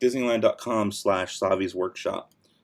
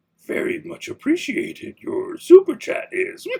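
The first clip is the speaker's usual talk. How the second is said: slow, drawn-out, creepy and silly little creature voice; 4 dB louder than usual. Streamer thanks a viewer for a five-dollar super chat: silly Yoda voice. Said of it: "say in a silly Yoda voice".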